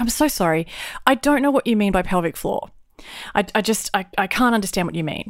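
usual speaking voice

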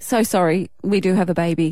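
ordinary delivery

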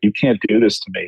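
ordinary talk

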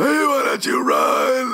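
high, strained, creepy wailing voice.

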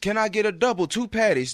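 play-acted, very high, shouted holler. Telling a story about ordering food, retelling the order-taker's shouted order to the kitchen. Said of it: "she shouts back to the kitchen".

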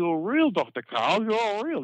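put-on Pompey accent. Retelling an audience member who came up to the stage, in a Pompey accent. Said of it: "in a Pompey accent".

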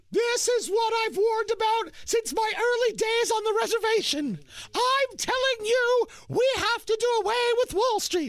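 bad put-on politician voice, very high, speechifying. Imitating a politician cheering about Wall Street: Elizabeth Warren impression. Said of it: "not a good Elizabeth Warren impression".

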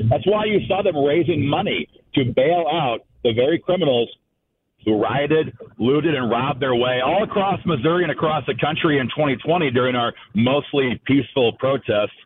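heavy, dripping sarcasm. Criticizing people who raised money to bail out rioters, with heavy sarcasm. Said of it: "heavy sarcasm intended".

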